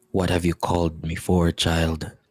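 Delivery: deep, low voice. Voicing a presence speaking to a sleeping player: deep voice. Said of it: "A deep voice reaches out to you".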